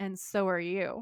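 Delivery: threatening, sinister, ominous tone. Retelling a character's reply to a guard: imitating a menacing tone. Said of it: "really menacingly".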